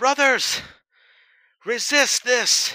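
very high, very loud, shrill, booming shout. Narrating the scene, the speaker voices Egil calling to the brothers: Egil yelling. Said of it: "he yells".

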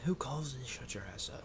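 hushed, whispered voice.

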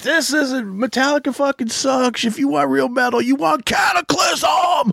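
high, shouted, pumped-up hype voice.

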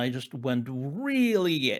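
plain

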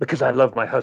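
mock very haughty, superior, lofty tone. Act out a contestant asked why she has so many children, imitating a haughty contestant. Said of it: "kind of very haughtily".

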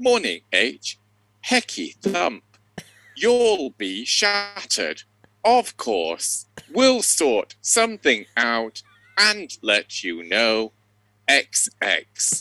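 mechanical, robotic, formal voice, read out machine-like. Retelling how a man's voice read out a text message: robotic, formal accent. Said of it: "in this very kind of robotic, formal accent saying".

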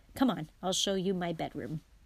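plain reading voice

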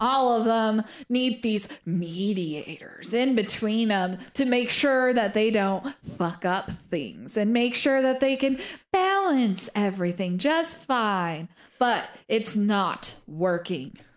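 thoroughly exasperated, fed-up complaining tone. Voicing a pacing character as he explains, sounding exasperated. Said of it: "he sounds exasperated".

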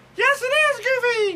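very high, loud, squeaky cartoon voice. Playing Mickey for Walt Disney Day and answering Goofy's question, in a Mickey Mouse voice. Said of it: "act like Mickey Mouse".

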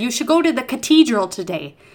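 Irish lilt with hard t for th. Retelling what a guy said to them, imitating Bill's Irish accent. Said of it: "all of his T's, H's were T's".

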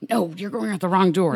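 put-on whisper. Retelling what a dance partner on stage said: imitating someone whispering.

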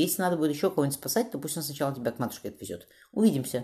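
ordinary delivery, nothing marked

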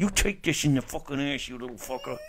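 speaking through gritted teeth. Showing how it should be said, talking through the teeth. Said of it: "You gotta be like this".

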